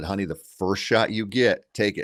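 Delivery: whispered, hushed. Retelling his whisper to his daughter as the bear sits: imitating his own whisper. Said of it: "I whispered to her".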